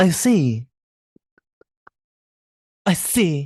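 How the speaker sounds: very slow, drawn-out put-on French accent. Acting out a character's reply after being asked: put-on French accent. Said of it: "please do it with the French accent".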